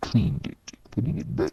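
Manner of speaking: ordinary delivery, nothing marked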